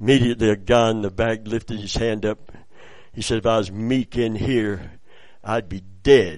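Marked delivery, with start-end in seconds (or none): 3.4-6.4 slow, snarled delivery. Retelling what a man in the back said during a Bible lesson; retelling a snarled remark. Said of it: "he said it with a snarl".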